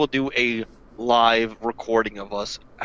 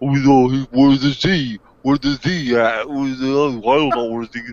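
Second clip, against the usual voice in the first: talking out the side of the mouth, louder; 2 semitones higher, 5 dB louder than usual. Mocking an actor's voice acting by talking out the side of the mouth. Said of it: "he talks out the side of his mouth".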